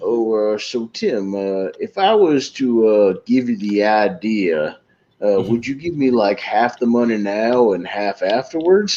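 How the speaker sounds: slow, halting Southern drawl with plenty of uhs. Retelling a comedy sketch's phone call: Bill Hader's Southern guy voice. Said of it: "Bill Hader calls as, like, a Southern guy".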